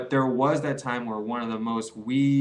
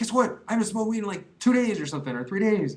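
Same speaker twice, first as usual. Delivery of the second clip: imitated excited voice, higher; 9 semitones higher than usual. Retelling a friend's unexpected phone call: imitating an excited friend. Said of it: "He's all excited".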